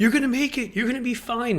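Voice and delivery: put-on shrill, patronising voice, very high and very loud. Retelling how a woman spoke to a crying five-year-old drenched in the rain, imitating a condescending voice. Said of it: "In a sort of condescending voice".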